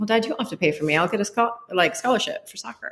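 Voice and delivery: self-assured, totally certain, confident delivery. Retelling a talk with a dad about paying for college: imitating own confident past self. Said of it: "I said it so confidently".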